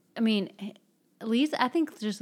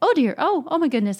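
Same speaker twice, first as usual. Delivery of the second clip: high-pitched, loud, frazzled and flustered panic. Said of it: "her mother's like".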